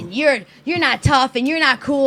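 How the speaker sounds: imitated yelling voice, bullying tone. Retelling a tenth grader insulting her in front of school: imitating someone yelling. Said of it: "she was yelling at me like".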